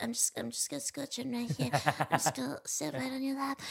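put-on dog voice. Describing how the golden retriever climbs onto the speaker's lap: voice used for the dog. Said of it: "this is my voice I use for him".

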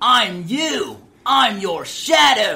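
flamboyant booming drawl, very high, slow, swooping. Contrasting two game characters' voices, showing how the evil one talks, Liquid Snake impression. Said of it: "Liquid Snake talks like this".

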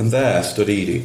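plain

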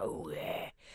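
whispered, breathy, put-on sexy Cockney voice. Retelling trying sexy talk with a partner: imitating own sexy talk. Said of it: "sexy talk".

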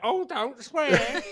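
high, camp pantomime-dame parrot voice. Voicing a parrot that repeats what it hears, as others react: camp parrot voice. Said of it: "why is yours so camp?".

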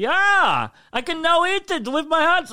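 very high, drawn-out, slow fake German accent. Retelling a man whose bread fell onto his open sandwich, in a bad German accent. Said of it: "I thought he said German, not Wales".

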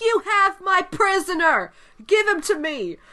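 mock shrill, insistent, high, drawn-out shout. Retelling a story about Indy, the speaker quotes the captain: retelling a captain's shout. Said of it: "the know captain keeps shouting".

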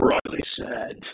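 deep, rumbling, cartoonish evil villain caricature voice. Repeating a phrase to show how the voice just went, deep evil caricature voice. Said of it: "Like some sort of evil caricature".

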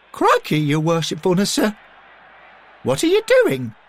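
very high squeak, swooping and rising. A character exclaims as the alderman removes his robes, squeaking. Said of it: "Derek squeaked".

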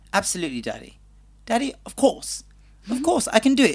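posh plummy RP accent, high and swooping. Asking to be cast as the Duke's son, showing off an RP English accent.

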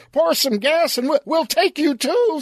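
shrill, very high-pitched yelling. Reading a story aloud, someone inside yells a threat: yelling. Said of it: "someone yelled".

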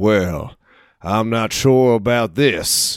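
imitated Texas accent. Retelling a Kiwi mimicking how Americans talk, in a Texas accent. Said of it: "started going into a Texas accent".

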